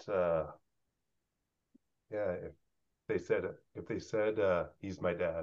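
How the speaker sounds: voice catching with emotion, choked up, soft, slow. A dad says what he hopes his kids would call him, choked up. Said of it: "I'm getting choked up a little bit".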